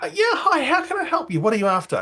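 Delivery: eager, friendly tone, pitched very high. Retelling how she comes over to greet you, imitating a smiling woman. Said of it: "gives you a big smile".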